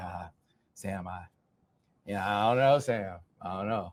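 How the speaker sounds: skeptical, unconvinced, halting, hedging tone. Retelling how Bryce reacted to a recruiting rumor: imitating skeptical Bryce. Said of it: "Bryce was real skeptical".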